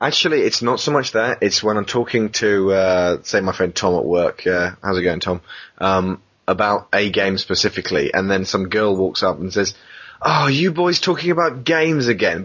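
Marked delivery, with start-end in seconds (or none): 10.2-12.4 high tone dripping with disgust. Retelling what a girl says to him and a friend at work: imitating a disgusted tone. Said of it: "the note of disgust in her voice".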